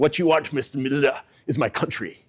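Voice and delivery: put-on heavy, hard South African accent. Retell Kruger looking at Milner and answering him, in a Kruger voice, hard South African accent. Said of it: "says in his you know hard South African accent".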